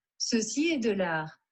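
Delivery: put-on French accent, pitched slightly high. Speaker shows the group the French he has been working on; French accent. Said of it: "That is my French accent".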